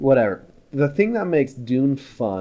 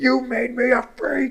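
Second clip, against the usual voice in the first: high-pitched, mocking yell. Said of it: "he yells at his mom".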